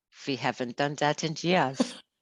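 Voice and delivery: put-on German-sounding accent. Retelling what she said at the airport, in a German accent. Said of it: "You suddenly went German on us".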